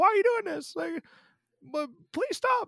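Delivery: acted-out shrieking, very high. Retelling a scene where Kinsey pleads with someone: imitating Kinsey screaming. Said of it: "She's screaming out".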